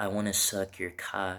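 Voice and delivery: quiet whisper. Retelling what a woman said into his ear: imitating a whisper. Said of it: "she whispers in my ear".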